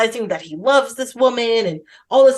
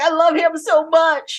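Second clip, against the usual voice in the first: mock crying, pitched up, very slow, drawn out; 6 semitones higher than usual. Retelling a movie scene where a character breaks into tears: imitating someone crying. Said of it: "she just breaks into tears immediately".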